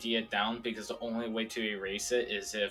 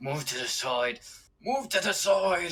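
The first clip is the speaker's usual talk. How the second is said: speaking through gritted, clenched teeth; 8 semitones higher, 3 dB louder than usual. Voicing a character telling a cart driver to move: speaking through gritted teeth. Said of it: "teething through his teeth".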